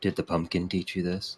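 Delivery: low whispered aside. Narrating a scene, the speaker gives Flick's line into the listener's ear, whispering. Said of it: "he whispers in your ear".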